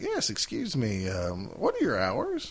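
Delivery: put-on slow, sing-song country drawl. Retelling a man who called the photo lab, in a country voice. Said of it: "Country voice".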